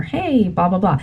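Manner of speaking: ordinary talk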